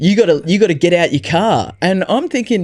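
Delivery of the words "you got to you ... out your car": imitated harsh, barking voice. Retelling a stranger who blocked the car in: imitating someone barking at him. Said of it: "barking at me".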